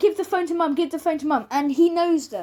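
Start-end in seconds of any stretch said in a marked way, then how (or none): 0.0-1.5 grown man's mild, insistent yell, repeated. Retelling how a man yells through a phone: imitating someone yelling. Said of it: "he is yelling".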